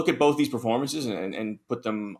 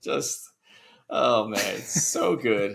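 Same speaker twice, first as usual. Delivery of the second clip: ordinary talk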